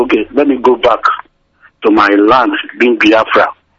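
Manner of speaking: plain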